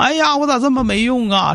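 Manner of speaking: high, tearful, helpless whining voice.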